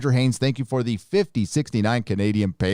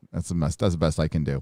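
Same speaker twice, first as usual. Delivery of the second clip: plain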